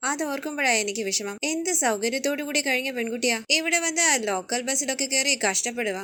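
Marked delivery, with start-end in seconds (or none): none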